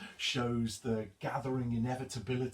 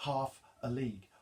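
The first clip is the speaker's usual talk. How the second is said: stress on "half", "a league" said lightly. Reading a poem's rhythm, stressed syllable then two unstressed: stress on half. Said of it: "It's a stressed syllable followed by two unstressed syllables".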